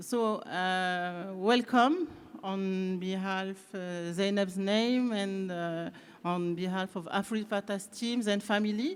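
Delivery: English with a little French accent. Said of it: "avec un petit accent français".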